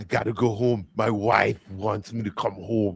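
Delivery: put-on German accent. Imitating what a German coworker says, imitating a German coworker's accent. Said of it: "He was saying".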